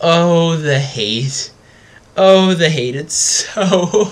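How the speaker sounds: high-pitched, cracking up laughing mid-line. Reading out a game card, unable to stop laughing at it: laughing. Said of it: "I can't stop laughing".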